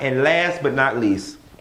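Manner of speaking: ordinary delivery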